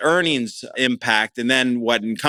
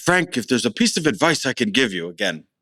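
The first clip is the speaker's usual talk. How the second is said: clumsy, bad, fake English accent. Quoting advice a man gave him by the pool, in a bad english accent. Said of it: "that's not very, very good English accent".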